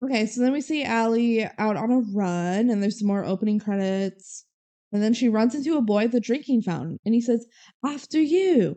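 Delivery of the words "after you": high-pitched mock British accent. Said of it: "in a very British accent".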